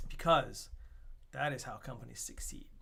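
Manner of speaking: whispered, breathy, mock-earnest sarcasm. Announcing a new logo that will replace the old ones: sarcastic. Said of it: "there's sarcasm behind that".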